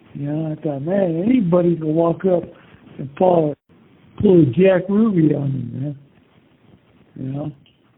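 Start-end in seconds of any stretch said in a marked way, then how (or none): none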